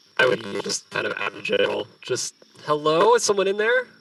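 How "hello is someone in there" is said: very high-pitched, carrying holler. Calling out toward moving plants from a cliff: yelling out. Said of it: "I just yelled that".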